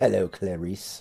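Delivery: low, soft, hushed put-on voice. Joking about a game encounter, greeting in Hannibal Lecter voice. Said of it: "do the Hannibal Lecter voice".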